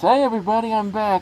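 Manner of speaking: muffled, as if through mask. Signing off jokingly, speaking as if through a gas mask. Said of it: "maybe you might hear me with a gas mask, like, like this".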